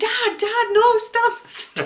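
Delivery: very high, shrill, drawn-out woman's shout. Retelling a woman calling to her dad on an ECV: imitating a woman shouting. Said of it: "I heard this woman shouting".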